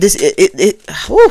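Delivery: loud, slow, tripping, stammering stutter. Speaker theorizing about who the dad phoned: stuttering. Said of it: "I'm stuttering".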